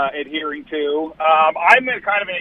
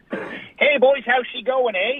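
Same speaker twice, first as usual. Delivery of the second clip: ridiculous exaggerated Canadian accent, slow and higher; 8 semitones higher than usual. Greeting the hosts on a call in a stereotypical Canadian accent. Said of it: "the most stereotypical, ridiculous Canadian accent I could do".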